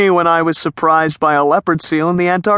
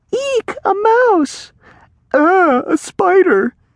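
very high, very slow, drawn-out little fake screams. Kids hanging out at the campfire start making little fake screams. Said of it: "fake screams".

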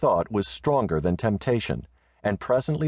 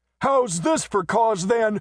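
very high, shrill yell; 12 semitones higher than usual. Narrator reads the messenger's line to Marietta as he strikes at her, shouted. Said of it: "shouted the messenger".

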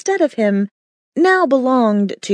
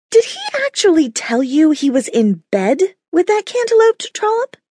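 mock sudden shriek, shrill and rising; 8 semitones higher than usual. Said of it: "She shrieked".

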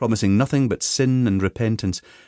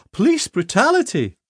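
very high, gasped-out cry; 11 semitones higher than usual. A woman, grabbed in a hug by a man, beats on his back, gasping. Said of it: "she gasped".

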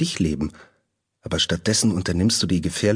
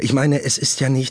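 stammering, stuttering in a much higher pitch; 6 semitones higher than usual. A narrator voices her faltering answer in a story, stammering. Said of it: "stammelte sie".

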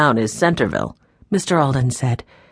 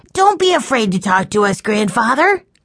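high, urgent, exclaimed cry; 6 semitones higher than usual. Narrator voicing a grandchild speaking to his grandfather, crying out. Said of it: "cried Benny".

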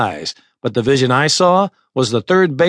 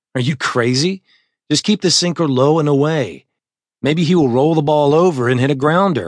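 usual speaking voice

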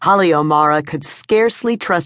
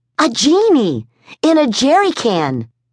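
eager, scarcely coherent excitement, pitched up, swooping; 8 semitones higher than usual. Reading a story, a woman answers her sister over a crackly connection: shaking with wild excitement. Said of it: "Her heart pounding, her throat taut, her hands shaking with wild excitement, [name] O'Mara could scarcely trust her words to be coherent".

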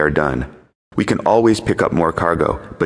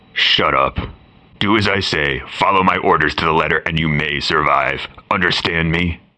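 rough, deep, low-pitched commanding voice. Reading a story: a pirate answers over the radio in a rough deep voice. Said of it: "A rough, deep voice emanating from the radio".

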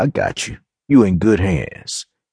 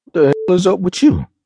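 slightly offended, very high-pitched; 12 semitones higher than usual. Narrator reads one woman questioning another in the car, slightly offended. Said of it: "sounding slightly offended".

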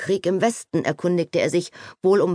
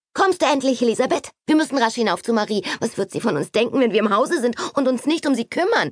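excited character voice, pitched much higher; 6 semitones higher than usual. Narrator reads Kitty's line urging Elisabeth upstairs: excited Kitty voice. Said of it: "war Kittys aufgeregter Geist schon wieder mit anderen Dingen beschäftigt".

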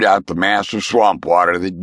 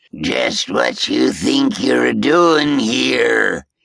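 rough, wet, gurgling ghost voice with bubbling words; 4 semitones higher than usual. The spirit snaps at Roan, in a gurgling watery voice. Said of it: "The words gurgled out of its watery larynx".

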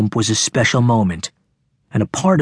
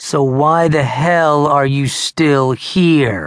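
bored, drawn-out delivery; 3 semitones higher than usual. Narrator reads Hayden's retort to Russell; bored drawl. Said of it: "Hayden drawled, sounding bored".

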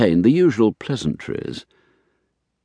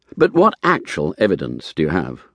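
ordinary delivery, nothing marked

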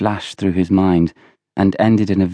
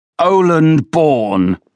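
high, bellowed, roaring shout; 8 semitones higher, 4 dB louder than usual. A man reaches under the table and grabs a boy by the ankle: roared. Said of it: "Roared Villiers".

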